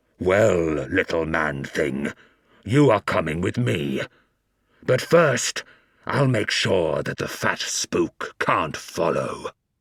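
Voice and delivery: muffled, deep, inhuman monster voice. Reading a story, the abhuman speaks to the narrator, in a muffled booming voice. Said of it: "its muffled voice booming through the trees".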